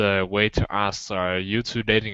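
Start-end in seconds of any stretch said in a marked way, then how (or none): none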